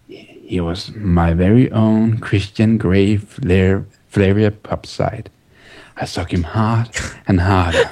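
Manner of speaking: put-on sexy, seductive voice. Reading a passage aloud after being asked for it: put-on sexy voice. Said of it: "read it in the most sexy voice possible".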